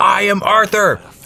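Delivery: loud, high-pitched yelling.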